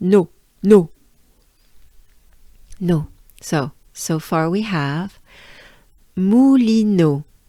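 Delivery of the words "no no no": "no" pronounced with a French accent. Leading listeners through pronunciation practice together, saying no with a french accent. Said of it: "Think about a no uh, with a French accent".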